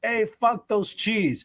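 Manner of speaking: acted screaming. Retelling what was screamed at a concert: retelling a scream. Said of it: "I was screaming at the same".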